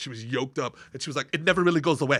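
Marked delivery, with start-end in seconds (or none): 1.3-2.2 imitated woman's Austrian accent. Retelling what a woman with a strong accent said, imitating her austrian accent. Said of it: "she hasn't lost her accent".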